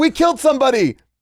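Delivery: loud shouted yell, pitched way up. Retelling what someone shouted on stage: imitating someone yelling. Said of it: "somebody just yelled out".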